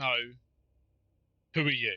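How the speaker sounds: chest-out, puffed-up attempt to sound intimidating. Voicing a character squaring up to an old man, puffing his chest up. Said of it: "puff his chest up and go".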